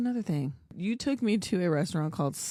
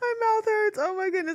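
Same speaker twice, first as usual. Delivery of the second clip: very high voice, words breaking up in laughter. Telling a story about a dentist visit, laughing too hard while talking. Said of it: "I'm laughing too hard".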